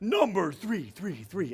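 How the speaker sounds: slow announcer-style count, self-made reverb echo on "three". Announcing the next countdown entry with a self-made reverb echo. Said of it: "I gave my own reverb there".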